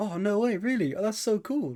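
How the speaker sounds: put-on high, cheery, amazed, delighted teenager gush.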